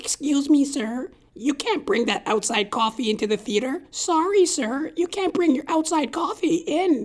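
put-on high, squeaky little pipsqueak teenage voice. Retelling a movie theater usher refusing outside coffee: imitating a teenage usher. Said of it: "seventeen-year-old freckled-faced little puke, goes".

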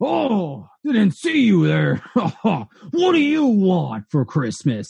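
slow, dim, oblivious giant brute voice, jolly blustering. Game master voicing a giant santa monster hit by a player's attack; giant monstrous santa voice. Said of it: "There is a giant burlippy Santa that is 20 feet tall, huge, swinging a giant sack of what you would think is toys. / There is a giant burlippy Santa that is 20 feet tall, huge, swinging a giant sack o".

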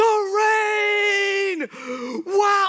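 acted laughing shout. A dad retelling picking up his daughter in the rain, acting out a joyful cry. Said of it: "I'm smiling. I'm laughing".

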